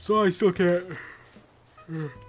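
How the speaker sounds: spoken mid-yawn. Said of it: "I don't know why I'm yawning so much".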